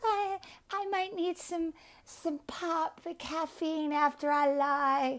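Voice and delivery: mock cartoon-mouse voice, high, soft and squeaky.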